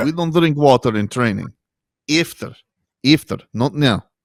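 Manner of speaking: put-on Russian accent. Describing a viral clip of her refusing her team water: Valentina Russian-accent impression. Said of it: "That's a good accent".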